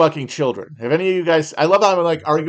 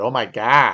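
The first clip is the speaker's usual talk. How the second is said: Wisconsin accent, lower pitch; 5 semitones lower than usual. Showing off the vowels of a regional accent: Wisconsin accent. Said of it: "the O in words like God".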